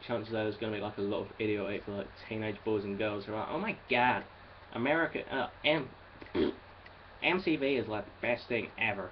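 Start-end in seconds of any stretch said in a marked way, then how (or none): 3.5-9.1 put-on, slow, badly done American accent. Mocking teenage fans who think america is the best, bad american accent. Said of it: "Sorry about the bad American impersonation".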